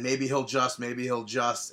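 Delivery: normal talking voice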